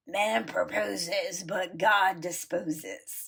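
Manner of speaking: raspy, cigarette-worn smoker's voice, very slow. Retelling what an old friend would say: imitating a friend's raspy smoker's voice. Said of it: "in her raspy, cigarette-smoking voice".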